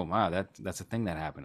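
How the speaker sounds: ordinary talk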